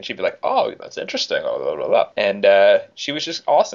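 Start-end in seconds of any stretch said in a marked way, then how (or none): 0.4-2.1 bad put-on voice, rough and creaky. Retelling a tennis player's reply to a reporter: terrible Andrea Petkovic impression. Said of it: "That was a terrible impression of her".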